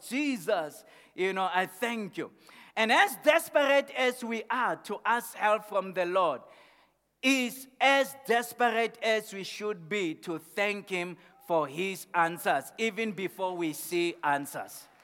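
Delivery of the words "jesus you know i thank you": usual speaking voice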